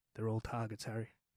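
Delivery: very low, deadpan, dead straight delivery. Retelling a story's punchline: deadpan, imitating Chopper Read. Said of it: "straight as a die without missing a beat".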